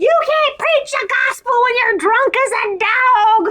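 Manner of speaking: mock very high scolding scream, "dog" drawn out. Telling a story about a woman yelling at a drunk preacher, imitating someone screaming. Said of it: "she's so screaming at this guy".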